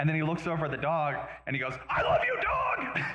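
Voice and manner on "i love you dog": shrill, very high, drawn-out, furious shouting. Retelling how a man on camera turns to his dog: retelling an angry yell. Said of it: "because he's yelling at him".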